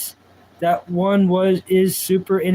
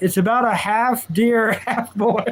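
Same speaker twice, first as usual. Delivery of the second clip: laughing through the words, slow; 3 semitones higher than usual. Reading out a show description to a live chat, laughing while talking. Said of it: "I'm sorry for laughing".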